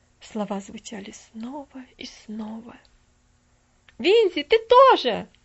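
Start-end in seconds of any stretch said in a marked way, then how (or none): 4.0-5.2 very loud, high shout. Stefali calls out to Vinzi, shouting. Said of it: "закричала Стефали".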